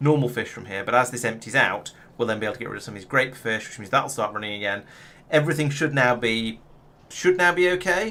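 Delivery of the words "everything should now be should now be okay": loud, high, very upbeat, optimistic and hopeful. Explaining the fish setup to the audience, in a very optimistic tone. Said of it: "I say in a very, very optimistic tone of voice".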